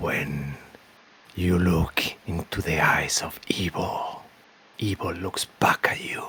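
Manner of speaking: rough, rasping voice throughout. A voice speaks to the player out of a misty mirror, raspy voice. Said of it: "you hear a raspy voice that says to you".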